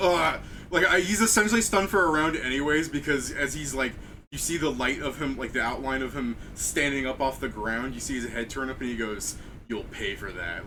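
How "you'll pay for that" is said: very low, deep, theatrical, dramatic villain voice. Voicing a stunned lich rising from the ground: dramatic lich voice. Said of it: "it's still dramatic sounding".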